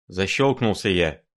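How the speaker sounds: plain reading voice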